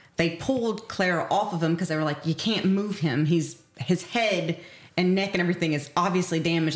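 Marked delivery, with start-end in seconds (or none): none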